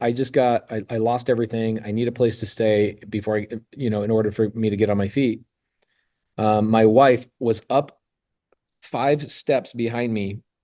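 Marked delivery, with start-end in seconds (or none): none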